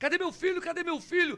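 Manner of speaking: high, calling shout. Retelling how his mother came running out of the house, imitating his mother shouting.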